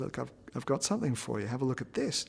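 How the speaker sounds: ordinary delivery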